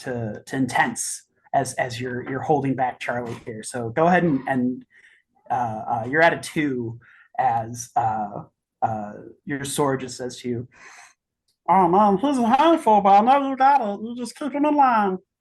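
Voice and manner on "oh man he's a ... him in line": very high, loud, squeezed cartoon voice. Voicing a sword that speaks to a player: Meatwad voice. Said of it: "That's Meatwad from Aqua Teen".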